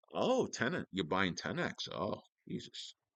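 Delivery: acted, subtly condescending New England tone, soft and swooping. Imitating people from New England belittling a buyer: imitating a subtly belittling New England tone. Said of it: "how people from New England can belittle you with very subtle, uh, changes in their voice".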